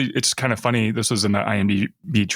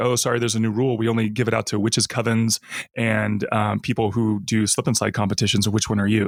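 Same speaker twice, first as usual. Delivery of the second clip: ordinary talk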